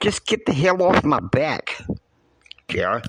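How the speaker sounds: put-on Brooklyn accent coming through. Retelling what Kristen said when she agreed to go: Brooklyn accent imitating Kristen. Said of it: "she's waxing this Brooklyn accent".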